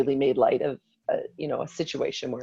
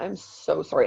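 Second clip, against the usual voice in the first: mock tearful, bawling, sobbing voice; 4 dB quieter than usual. Retelling apologizing to her husband: reenacting own bawling apology. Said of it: "and I'm bawling".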